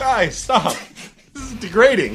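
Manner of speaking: high, tearful, crying and pleading tone. Retelling pleading with guys bouncing candy off their chest, imitating own crying. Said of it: "I'm sitting there crying like".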